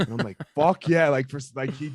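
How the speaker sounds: ordinary talk, nothing marked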